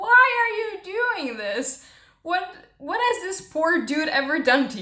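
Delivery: full-on, high-pitched screaming outburst. Retelling reading the book and screaming at the author: imitating own past screaming. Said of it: "I was screaming".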